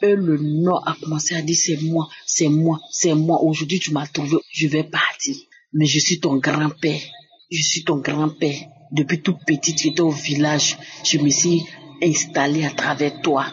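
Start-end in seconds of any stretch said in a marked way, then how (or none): none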